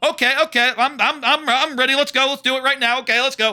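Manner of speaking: over-eager, high, loud babbling. Retelling a show scene, voicing the boy: imitating an eager boy. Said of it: "how down for it he is".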